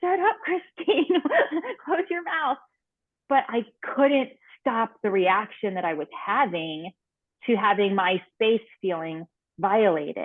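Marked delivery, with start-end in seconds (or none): 0.0-2.6 high, slow, scolding inner voice. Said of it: "a small part of my brain ... was kind of like".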